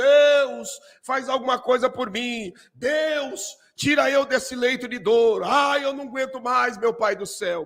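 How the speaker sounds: mock groaning, howling, wailing desperate cries. Speaker acts out a sick person in bed crying out to God, imitating a moaning, wailing plea. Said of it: "gemendo e uivando e gritando".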